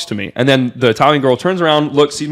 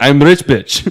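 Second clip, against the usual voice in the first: put-on very strong, heavy Russian accent. Retelling what a woman said to the speaker, in a very strong russian accent. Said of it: "very strong Russian accent".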